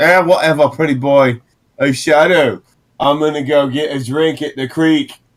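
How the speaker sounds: put-on cocky, dismissive, taunting, swaggering punk teen voice. Voicing Odoric as he heads off to the creek: Odoric, swaggering punk teen. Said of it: "[name] is a swaggery punk teen, 18 years old, Mhm. 18, red hair, acting like he's got some kind of position of importance, / [name] is a swaggery punk teen, 18 years old, Mhm. 18, red hair, acting lik".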